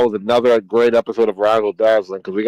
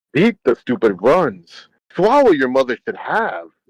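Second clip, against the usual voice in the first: swooping, sing-song put-on tone; 3 semitones higher than usual. Retelling a remark to someone talking trash, in Yoda tone. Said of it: "my Yoda tone".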